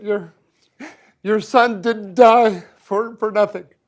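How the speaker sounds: voice breaking down, losing composure emotionally. Speaking to the other speaker after being thanked, losing composure. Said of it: "sorry, I'm losing it".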